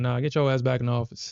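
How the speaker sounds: plain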